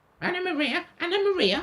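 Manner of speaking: very high, shrill, squeaking rat voice. Reading a story aloud, the rat calls out for Anna Maria: squeaky rat voice. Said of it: "squeaked the rat".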